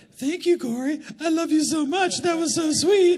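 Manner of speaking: tiny put-on little voice, very high and slow. Recalling thanking someone, the speaker switches to a small put-on voice. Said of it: "then I would do this little voice".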